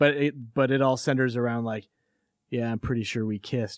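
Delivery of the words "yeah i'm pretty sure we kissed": put-on deadpan sincere delivery. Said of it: "said with such, like, deadpan sincerity".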